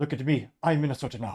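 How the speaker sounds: worst put-on Somali accent. Reading aloud a meme line spoken by a movie pirate: bad Somali accent. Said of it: "perhaps the worst Somalian accent".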